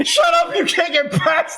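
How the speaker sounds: very high, shrill, loud yelling. Blocked from going further, a player yells at a curtain. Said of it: "You're yelling at a curtain".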